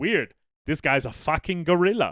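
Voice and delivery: loud, put-on German accent. Correcting a retold story, the speaker quotes the radiologist in a german accent. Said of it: "he has a German accent, so he's like".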